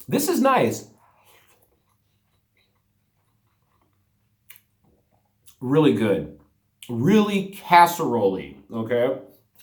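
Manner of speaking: talking with mouth full. Tasting the food while still talking, talking with mouth full. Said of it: "Forgive me for eating with my mouth full".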